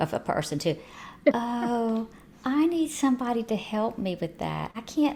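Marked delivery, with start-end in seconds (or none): 1.3-5.2 much softer voice, raised an octave. Showing the octave in a person's voice when asking for help: soft, higher voice. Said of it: "Just see how much softer that is".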